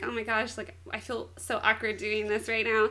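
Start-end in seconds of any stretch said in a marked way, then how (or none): none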